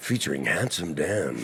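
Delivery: dramatic, epic movie trailer announcer voice. Announcing the featured names: movie-trailer voice. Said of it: "I'll do the movie trailer voice".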